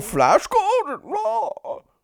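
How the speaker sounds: very high, wide, swooping pitch swing. Riffing on a Flash Gordon line with others, do a Brian Blessed impression. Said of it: "I keep doing Bane. Like apparently Bane and Brian Blessed".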